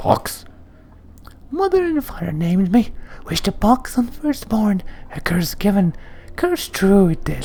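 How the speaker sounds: put-on very high, squeaky little-girl voice with drawn-out "hi". Voicing a man answering questions about his name: high-pitched Pox voice. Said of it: "responds in a high-pitched voice that sounds more suited to a girl of ten years".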